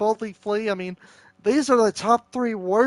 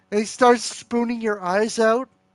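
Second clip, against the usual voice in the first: ordinary talk, nothing marked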